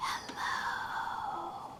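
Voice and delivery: whispered, very quiet, barely audible. Leading listeners in saying hello without waking a sleeping dog, whispering. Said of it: "We'll whisper it together".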